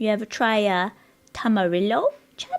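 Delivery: voice cracking mid-line. Asking chat whether they ever tried a tamarillo, voice cracking. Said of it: "my voice just broke like I'm a fucking fourteen-year-old boy".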